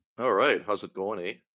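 exaggerated Canadian accent. Greeting his son as he joins the podcast, playing up a Canadian accent. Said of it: "just busting out the Canadian".

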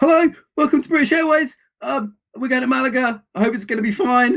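nervous pilot voice, pitched very high. Explaining how a voice conveys trust, demoing a mock-anxious pilot announcement. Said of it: "just the anxiety, you'd hear that fight or flight response".

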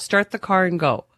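plain

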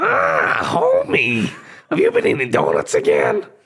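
very high, swooping, put-on cartoon housewife voice. Asked what voices they can do, the speaker performs a cartoon housewife impression. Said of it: "It's like a male version".

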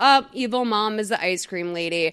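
ordinary delivery

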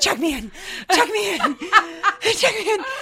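mock very high, desperate, frantic, rising, repeated. Retelling rushing up to check in, imitating own frantic plea. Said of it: "I'm like".

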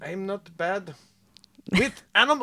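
clumsy put-on German accent, soft and high. Two speakers try a quoted line in accents: bad German accent. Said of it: "You just sound like Hitler".

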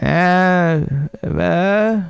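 high, groggy, half-asleep grunt. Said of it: "She goes".

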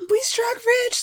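acted excited voice. Acting out a father bursting in to announce gold: imitating someone so excited. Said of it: "so excited".

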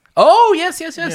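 voice soaring way up, very high and very slow. Answering a reminder about an earlier talk, voice going very high. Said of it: "your voice went too high there".

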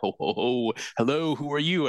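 put-on high, jolly old man voice with ho-ho-ho. Retelling meeting a mall Santa as a child: Santa Claus voice. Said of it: "Santa's like".

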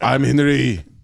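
put-on child voice. Joking about Henry Kissinger as a child: eleven-year-old Henry Kissinger voice. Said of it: "Henry Kissinger at eleven just being like".

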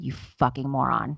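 acted muttering under breath. Retelling what she said when he asked a question, muttered under breath. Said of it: "I muttered under my breath".

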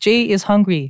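put-on cutesy toddler-style voice. Giving an example of someone talking about themselves in third person, in baby talk. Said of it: "in baby talk".

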